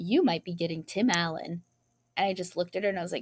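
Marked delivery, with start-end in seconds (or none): 0.0-1.6 mock nonchalant, offhand, mildly put-out aside. Retelling a waitress's remark at work: imitating a nonchalant, slightly annoyed tone. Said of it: "very, like, nonchalantly, almost like she was kind of sort of annoyed".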